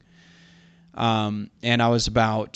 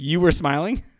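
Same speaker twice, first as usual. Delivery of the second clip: laughing in disbelief with raised pitch. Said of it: "And he's like".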